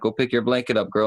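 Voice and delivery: ordinary talk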